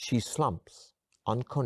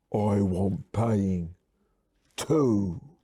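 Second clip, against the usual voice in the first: husky, throaty voice; 4 dB louder than usual. Grabbing the listener by the throat, Ivy demands payment in a husky voice. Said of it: "says in a husky voice".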